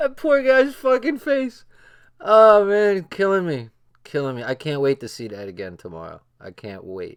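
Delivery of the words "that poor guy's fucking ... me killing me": very high, loud talking through laughter. Trying to stop laughing with the others, the speaker keeps laughing while talking. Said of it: "let's try to stop laughing".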